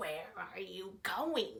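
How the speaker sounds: growled, growling wolf voice. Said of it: "growled the wolf".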